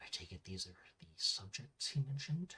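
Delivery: very quiet, low mutter under the breath. Speaking in character so only she can hear: muttered under breath. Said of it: "I say under my breath as much as I can so only she can hear me".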